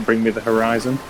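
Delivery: ordinary delivery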